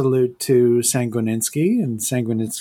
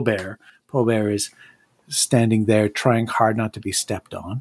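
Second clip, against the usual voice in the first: ordinary delivery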